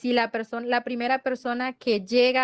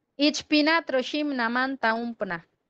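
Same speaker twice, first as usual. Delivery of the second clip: normal talking voice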